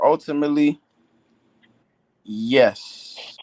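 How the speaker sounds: spoken slowly. Answering the questioner about paying for Donovan Mitchell, said slowly. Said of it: "I say that slowly".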